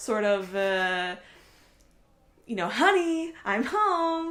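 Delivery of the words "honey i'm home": overacted fifties-sitcom style, big, high, hammy. Describing an old film's style, quoting with overacted I Love Lucy style. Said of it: "very this sort of overacting type".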